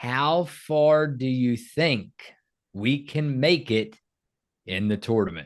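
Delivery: very slow, halting reading, word by word. Podcast host reading a listener comment to his co-host; reading very slowly. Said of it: "I'll read it very slow".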